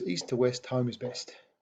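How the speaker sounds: ordinary delivery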